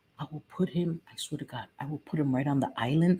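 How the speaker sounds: low, hushed half-whisper under the breath. Speaker half-whispers because their son is nearby; half-whispering. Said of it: "I'm just whispering because my son is here".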